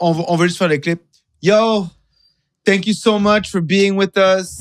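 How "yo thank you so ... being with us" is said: stiff, flat, robot-like monotone delivery. Wrapping up the clip by thanking the guest, robotic. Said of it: "You don't have to do it so robotic".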